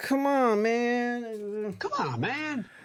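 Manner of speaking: mock young teen voice, high and gushing.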